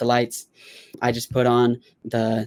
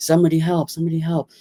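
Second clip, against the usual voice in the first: mock urgent crying-out scream; 5 semitones higher than usual. Recalling a seizure, imitating his companion screaming for help. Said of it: "He starts screaming like".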